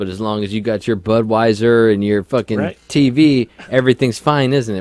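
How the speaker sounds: loud, dripping, scornful sarcastic tone. Imitating how people would sarcastically answer: imitating a sarcastic remark. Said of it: "would sarcastically go".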